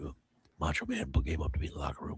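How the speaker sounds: deep gravelly rasp, very low and soft. Retelling a wrestler's locker-room story about Macho Man, in Jake's gravelly voice. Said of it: "Jake's already got the gravelly voice".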